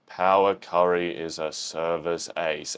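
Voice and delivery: play-acted very low, slow, flat monotone. Imagining how a character would read an ad line: flat line reading imitating Kageyama. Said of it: "I can just imagine Kageyama would be like".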